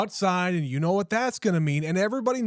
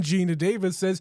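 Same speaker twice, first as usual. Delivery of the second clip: ordinary talk, nothing marked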